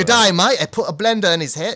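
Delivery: fake, poorly done, off-target Australian accent. Retelling a character's line to another speaker: bad australian accent. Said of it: "That's not an Australian accent".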